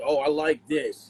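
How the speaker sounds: normal talking voice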